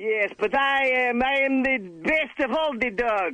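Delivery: put-on Russian-accented dog voice. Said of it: "Wheel of Bad Animal Voices".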